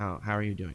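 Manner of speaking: quiet, courteous, considerate tone. Leaning over to a grieving character, asking how she is: quiet and polite.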